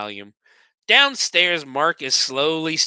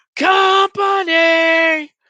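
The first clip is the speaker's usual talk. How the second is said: mock yell, much higher, louder; 7 dB louder than usual. Narrating a scene where two people smash their way inside, retelling a yell. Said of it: "they both just yell".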